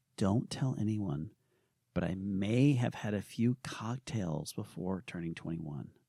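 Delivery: low, soft, hushed half-whisper. Answering the co-host on a season launch episode, half-whispering. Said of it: "you're whispering".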